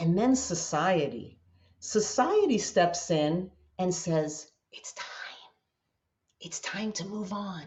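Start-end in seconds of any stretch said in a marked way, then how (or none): 4.7-7.6 whispered, hushed, breathy, barely voiced. Voicing what society says to someone not ready to move on, whispering. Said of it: "why are you whispering?".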